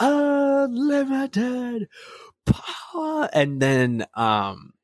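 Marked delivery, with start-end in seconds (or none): 0.0-3.3 very high shriek with the first word drawn out. Retelling a scene where Palpatine screams: imitating Palpatine screaming. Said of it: "you hear Palpatine screaming".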